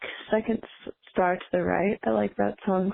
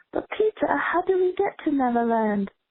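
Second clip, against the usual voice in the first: poorly faked British accent with raised pitch; 7 semitones higher than usual. Speaker quoting a favorite line of Wendy's to Peter, in a bad British accent. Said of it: "I only do British accents when I quote that line".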